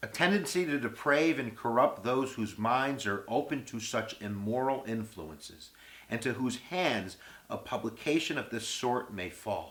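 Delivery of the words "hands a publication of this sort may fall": normal talking voice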